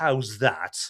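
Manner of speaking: put-on sinister, ominous British accent. Recounting a repeated line from a movie, Jimmy's ominous British accent. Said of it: "with his very ominous British accents".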